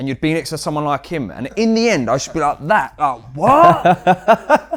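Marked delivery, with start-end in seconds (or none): 2.7-4.8 high, loud shout. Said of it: "You just have to shout".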